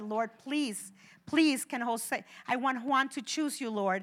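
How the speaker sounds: crying voice. A parent recalls praying for their son to choose the lord; retelling a tearful prayer. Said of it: "And then I cried and I said".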